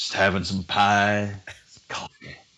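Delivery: put-on Western cowboy voice. Retelling how a guy acted in a diner: Sam Elliott voice. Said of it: "like Sam Elliott".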